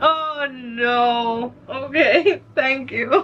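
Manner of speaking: crying with happiness while speaking. Thanking someone for gifts while crying from happiness. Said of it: "Sorry that I'm crying".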